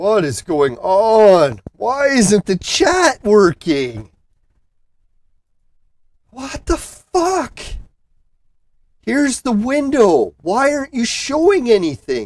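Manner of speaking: frantic freaking out. Searching for the missing chat window on the stream: freaking out. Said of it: "Sorry to be freaking out".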